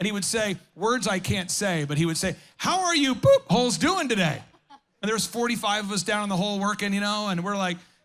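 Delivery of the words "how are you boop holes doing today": mock yelling down. Retelling how a construction boss yelled down to the workers in the hole, imitating him yelling. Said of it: "he's yelling at us because he's up".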